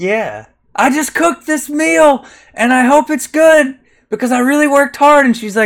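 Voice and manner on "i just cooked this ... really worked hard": acted scream, higher and louder. Retelling a film scene where a sister addresses dinner guests: imitating a character screaming. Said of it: "screaming at these people".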